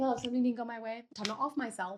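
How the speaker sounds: plain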